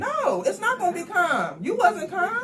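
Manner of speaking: loud, high, swooping shouting. Told to calm down in an argument about putting their daughter to sleep, yelling. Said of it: "Calm it down, please".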